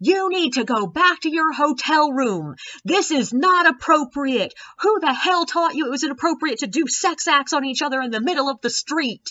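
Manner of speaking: put-on, high, furious scolding scream. Retelling how an angry bachelorette yelled at a couple: imitating someone screaming. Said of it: "she just starts screaming at the top of her lungs".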